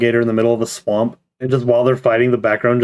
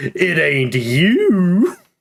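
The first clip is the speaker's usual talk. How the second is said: sassy, high-pitched, with you swooped up and stretched; 7 semitones higher than usual. Retelling a clip where Robotnik answers the queen's mirror question: sassy Robotnik voice. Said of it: "why'd you make him so sassy?".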